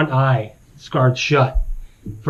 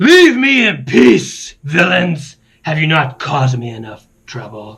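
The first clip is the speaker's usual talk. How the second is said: dragon-like creature voice; 3 semitones higher, 3 dB louder than usual. Voicing a wounded dragon, Venomfang, who orders the party away: voicing the dragon Venomfang. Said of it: "You hear a familiar voice".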